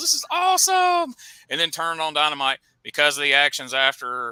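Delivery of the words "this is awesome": mock excited cheering, higher and louder. Retelling how fans reacted after the pay-per-view: imitating excited fans. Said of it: "went home like".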